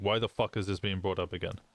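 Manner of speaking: acted-out, exasperated, fed-up burst of frustration. Retelling own words from a phone call: retelling own frustrated outburst. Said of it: "Lucy could hear the frustration in my voice".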